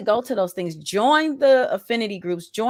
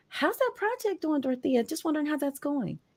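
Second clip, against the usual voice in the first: syrupy, honeyed, sugary sweet tone; 4 semitones higher, 7 dB quieter than usual. Imitating a coworker who was sarcastic the day before: imitating a sugary sweet tone. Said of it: "Now it's all sugary sweet".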